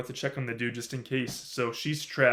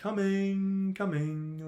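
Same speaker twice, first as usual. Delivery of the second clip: acted, breezy, casual, no-big-deal, unbothered tone; 8 semitones higher than usual. Retelling the scene where Elsa answers her sister Helen at the door: mock-casual, like no big deal. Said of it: "like no big deal".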